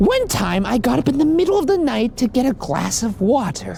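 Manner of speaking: tiny, very high, squeaky elf voice. Host reading a listener's Instagram story aloud, in a Dobby-like voice. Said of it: "Sounds like Dobby".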